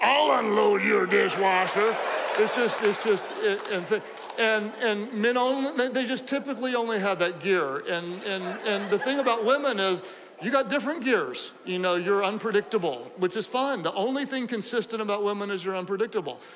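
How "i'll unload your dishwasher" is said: slow, louder suggestive come-on voice. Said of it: "the man will be like".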